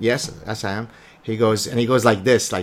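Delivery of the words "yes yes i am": ordinary delivery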